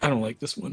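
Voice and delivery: stage-whispered aside. Walking out with the group in character, whispering to them: whispering in character. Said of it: "I just sort of whisper to you guys".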